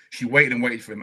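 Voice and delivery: fighting off tears mid-sentence. Talking about a late mother who waited for her husband, holding back tears. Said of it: "I'm trying not to get teary".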